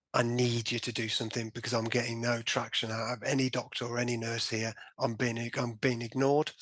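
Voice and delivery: ordinary talk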